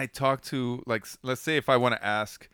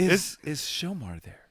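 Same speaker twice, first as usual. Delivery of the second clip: telephone voice; 5 semitones higher than usual. Asked to show it, demonstrating a phone voice. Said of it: "let me hear that phone voice then".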